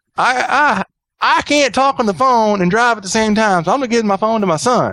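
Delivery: woman's voice, pitched way up, very high, stammering. Retelling what a lady on the phone said: imitating a caller. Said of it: "doing my best impersonation of her".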